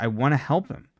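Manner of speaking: ordinary talk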